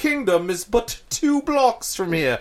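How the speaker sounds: fake British accent. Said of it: "That was a fake British accent".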